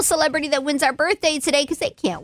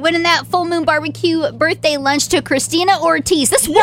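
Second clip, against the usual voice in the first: usual speaking voice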